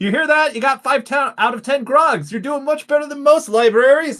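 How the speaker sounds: very high-pitched, shrill shouting. Role-play character calls into the room the librarian went into, shouting. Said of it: "I shout at the room".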